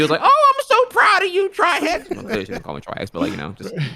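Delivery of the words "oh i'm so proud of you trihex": very high, slow, drawn-out delivery. Retelling what a grandma said about charity gaming: imitating grandma's voice. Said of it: "that's actually my grandma sounds".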